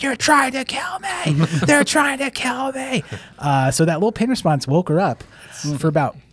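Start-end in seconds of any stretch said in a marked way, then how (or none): 0.0-3.0 mock, very high-pitched, shrieking scream. Retelling a patient who sat up and screamed at them: imitating someone screaming. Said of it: "she starts screaming at us".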